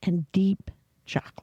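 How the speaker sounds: late-night voice. Reading a stout's description aloud, in a nighttime voice. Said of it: "She's got the nighttime voice".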